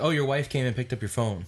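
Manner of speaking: plain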